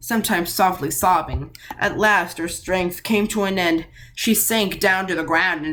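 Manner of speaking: plain reading voice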